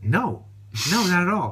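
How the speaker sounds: quiet, dry, deadpan delivery. Retelling a woman's reply to his joke before her race, imitating her deadpan. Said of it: "Deadpan, she's like".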